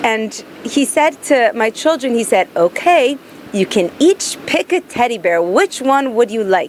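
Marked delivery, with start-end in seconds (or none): 2.6-6.7 put-on English accent. Retelling what a man said to their children: imitating his English accent. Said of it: "He said in his English accent".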